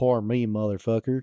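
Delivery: plain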